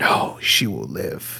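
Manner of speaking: slow, hushed, drawn-out whisper. Imagining Nick Briggs leaning in behind the writer: retelling his whisper. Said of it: "leaned in a whisper".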